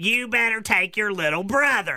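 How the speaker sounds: stern, scolding, laying-down-the-law voice. Speaker acts out an exchange between a mom and her child, mom impression. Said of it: "I even did my little mom impression".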